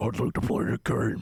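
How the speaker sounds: put-on chain-smoker voice. Telling the other speaker they sound like Jigsaw, doing a Jigsaw impression. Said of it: "You sound like Jigsaw".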